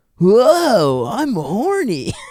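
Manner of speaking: whoa stretched out, pitch swinging, lustful cartoon voice. Showing the others an impression after a worse one: horny Goku impression. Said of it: "as good as my horny Goku".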